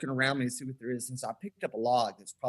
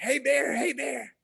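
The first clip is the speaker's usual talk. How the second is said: play-acted shrill raspy holler, very high and drawn out; 12 semitones higher, 4 dB louder than usual. Retelling jumping up with arms raised to scare a bear: retelling a scream at a bear. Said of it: "I'm screaming like".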